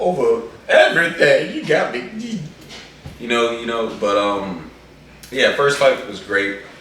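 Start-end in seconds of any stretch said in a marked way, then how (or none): 0.0-2.4 high, loud, choked-up voice. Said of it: "you're a little choked up".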